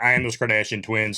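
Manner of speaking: plain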